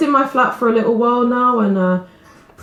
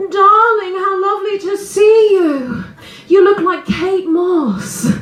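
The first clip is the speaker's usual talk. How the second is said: put-on, high, drawn-out, theatrical stage voice; 9 semitones higher than usual. Speaker imitates their granny greeting them as a six-year-old, imitating granny's actor voice. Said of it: "puts on this kind of actor voice".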